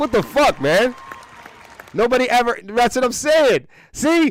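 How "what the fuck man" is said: incredulous, thrown, shocked, baffled reaction. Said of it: "Sal's like".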